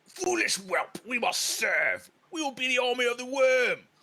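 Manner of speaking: huge orc voice, pitched very high. Voicing a very large orc arguing in a swamp: very large orc voice. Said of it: "a very large orc in the center".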